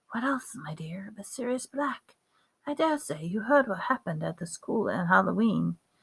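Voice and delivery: very quiet, hushed murmur, kept close. Narrator reading a character's line after he checks for eavesdroppers, very quiet voice. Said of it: "he said in a quiet, super quiet voice".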